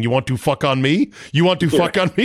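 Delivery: play-acted raw, half-held, high-pitched mild scream. Retelling a movie scene where a character screams: screaming like Mister Chow. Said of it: "starts screaming".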